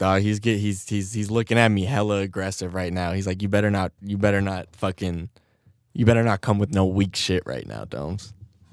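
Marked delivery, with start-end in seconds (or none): none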